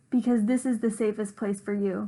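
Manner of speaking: plain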